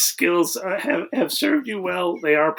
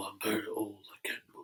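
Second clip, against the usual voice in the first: put-on deep, soft, very low, hushed old man voice; 9 semitones lower, 15 dB quieter than usual. Discussing how voices lose high pitch with age, demonstrating an old man voice. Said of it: "you lose the high pitch as you get older".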